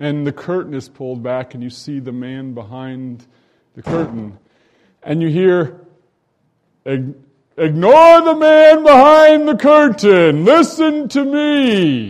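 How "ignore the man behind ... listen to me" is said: very loud, very high, booming, slow, swooping thundering voice. Retelling the scene where the curtain is pulled back, loud booming voice. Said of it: "there's that loud booming voice".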